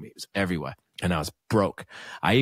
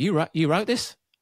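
put-on Australian accent, pitched way up; 10 semitones higher than usual. Retelling a friend from Australia reacting to the TV: put-on Australian accent. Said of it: "I've gotta stop doing the Australian accent".

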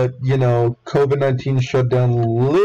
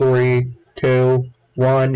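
robotic, machine-like voice, much slower. Describing a water ride's countdown to listeners, in a robotic countdown voice. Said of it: "in, like, the most robotic voice ever".

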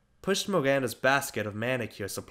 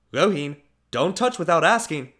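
cautious, wary voice, raised and calling out; 5 semitones higher, 7 dB louder than usual. A cousin calls out to someone opening and closing the fridge: calling out warily. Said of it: "Laxmi's cousin called out warily".

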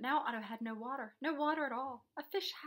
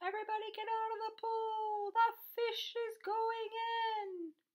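very high, drawn-out hollered yell; 11 semitones higher than usual. The fireman warns everyone at the pool as the fish arrives: yelling. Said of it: "The fireman yelled".

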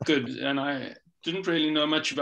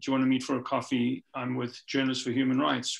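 usual speaking voice

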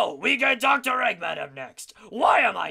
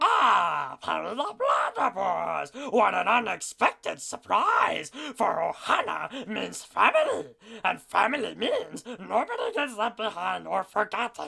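swooping mashed-up cartoon voice, opening ah stretched. Voicing a mix of two characters: Stitch and Doofenshmirtz voice mix. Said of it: "what does Stitch and Doofenshmirtz sound like together".

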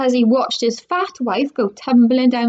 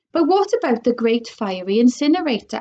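plain

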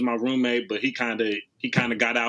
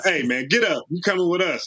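mock yell, called out, pitched high; 6 semitones higher than usual. Retelling how a dad walked in and yelled at him to get up: imitating a yell. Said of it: "his dad just yelled at me like".

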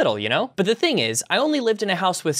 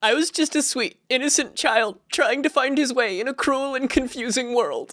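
high-pitched fake sobbing through every word; 7 semitones higher than usual. Justifying the dumb things he did as a kid, mock crying.

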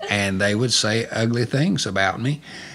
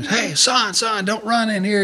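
mock, high-pitched screaming yell; 12 semitones higher than usual. Retelling chasing a running child through the sanctuary: retelling screaming at a child. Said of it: "I'm screaming at him".

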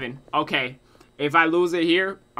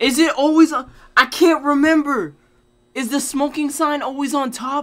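very high, loud, flustered and panicked voice; 11 semitones higher, 6 dB louder than usual. Asking whether the smoking sign is always on top: panicking. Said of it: "I'm panicking".

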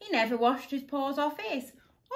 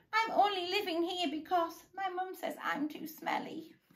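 soft, high, whiny little voice; 6 semitones higher, 6 dB quieter than usual. Narrator reads someone mistaken for a monster explaining himself, whining. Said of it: "Wilson whined".

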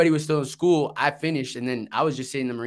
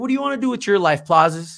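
put-on loud, raised, old New Orleans accent; 7 semitones higher, 5 dB louder than usual. Act out a funny old guy from New Orleans asking you a question, as a Gunny Thompson impression. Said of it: "And he talked like this".

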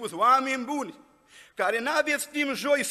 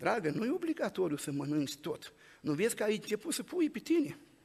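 put-on affectionate, soft, tender sweet-talking murmur; 7 dB quieter than usual. Retelling a joke where a husband speaks into his wife's ear: mock-affectionate tone. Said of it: "îi spune așa drăgostos la ureche".

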